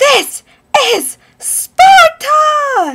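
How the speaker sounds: huge, high-pitched yell, slowed right down.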